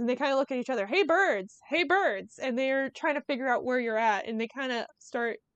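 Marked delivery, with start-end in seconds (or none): 0.9-2.4 mild, bird-like parroted echo. Explaining how birds echo a human shout, repeating their call back, in a mimicking shout. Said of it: "they mimic your voice exactly".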